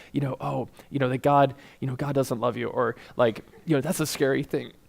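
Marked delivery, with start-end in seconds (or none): 0.4-2.7 acted-out hushed whisper, much quieter. Speaker acts out the enemy speaking to Eve in the Garden of Eden, whispering. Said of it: "he like whispers".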